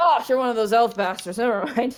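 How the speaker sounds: put-on acted drunk-sounding voice. Voicing a drinker who leans over to a young elf: in-character drinker voice. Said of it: "He kinda leans over".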